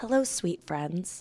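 softest, gentle, nurturing voice. Describing a video creator's greeting, imitating her very soft voice. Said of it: "she has the softest voice and she talks like this".

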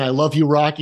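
ordinary talk

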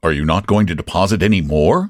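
ordinary delivery, nothing marked

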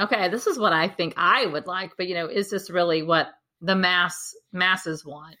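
plain

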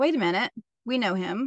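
ordinary talk

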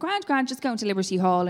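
ordinary talk

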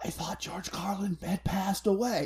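hushed, quiet whisper. Retelling what an intoxicated friend said at a casino table: imitating a whisper. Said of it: "leans over and whispers to me".

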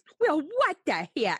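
put-on Minnesota mom accent. Acting out Barbara calling the detectives back about the business card, use Barbara's Minnesotan mom voice. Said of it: "Because she's a Minnesotan mom".

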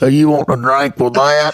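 loud, worn-out voice of a heavy smoker. Retelling ordering burritos at Taco Bell, the speaker imitates the woman serving, smoker's voice. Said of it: "She sounded like she smoked Prince Albert through a paper bag".

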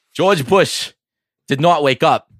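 put-on light Boston accent. Mimicking a friend's sports rant, slipping into a slight Boston accent. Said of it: "That was kind of Boston-y".

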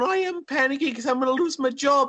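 put-on, high little old lady voice. Retelling a TikTok sound to another speaker: imitating a little old lady voice. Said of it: "the sounds of little old ladies going".

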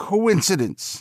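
very high, faltering, stammering voice. Narrator reads the old man's line, stammering. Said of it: "stammered the old man".

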